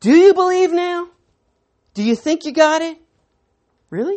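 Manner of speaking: put-on lightly sarcastic tone. Paraphrasing a Bible passage, retelling Jesus sarcastically. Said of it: "it sounds like there's a little sarcasm in Jesus' response".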